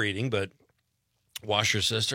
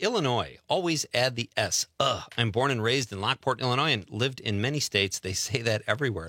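ordinary talk, nothing marked

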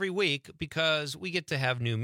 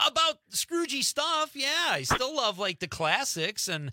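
high, loud, raised near-yell, pushed out. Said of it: "You're kinda loud".

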